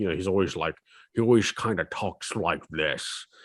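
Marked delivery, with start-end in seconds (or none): 1.1-3.2 put-on talking like an old man. Speaker mocks a pirate movie starring Walter Matthau, doing Walter Matthau's old-man voice. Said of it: "He sounds like an old man".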